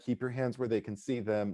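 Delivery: quiet, dead-serious, deadpan delivery.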